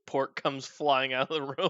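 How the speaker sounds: ordinary delivery, nothing marked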